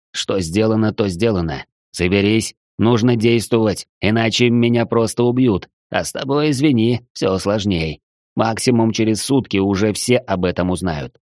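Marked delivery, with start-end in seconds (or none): none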